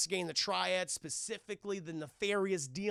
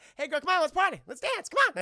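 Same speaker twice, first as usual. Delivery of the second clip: very high, very loud, bouncy flirtatious squeal; 11 semitones higher, 9 dB louder than usual. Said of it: "He's like".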